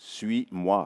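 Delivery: slow, deliberate, each word drawn out with care. Passing on what the Lord says this morning: spoken slowly. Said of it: "je le dis lentement".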